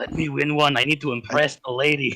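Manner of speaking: whispered in a character voice. Leaning over to an opponent mid arm wrestle: whispering in character. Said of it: "I lean over and I whisper to Crisis".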